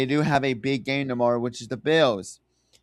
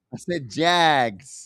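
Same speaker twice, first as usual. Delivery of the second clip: American Southern accent. Insisting which team they named during a mix-up; southern accent. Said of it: "Excuse my southern accent".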